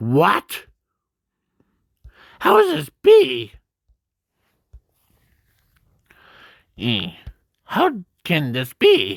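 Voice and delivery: high, animated sing-song with wide pitch swings. Retelling a scene and quoting the character: Shiraki-sen voice. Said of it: "I have to use that voice".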